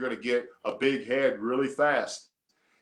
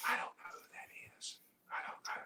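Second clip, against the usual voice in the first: puzzled, very soft whisper. Retelling a story, acting out a girl in the group talking to her friend: imitating a whisper. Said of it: "she's trying to whisper to her friend".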